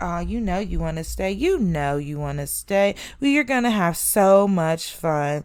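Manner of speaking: mock low-key teasing, taunting tone. Retelling how other girls at a sleepover taunted: imitating low-key taunting. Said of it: "low-key taunting me".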